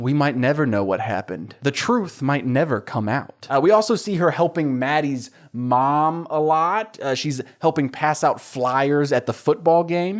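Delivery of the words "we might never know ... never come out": acted ominous voice. Retelling a teacher's line to a student about a disappearance: imitating an ominous tone. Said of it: "she says very ominously".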